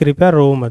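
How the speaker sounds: normal talking voice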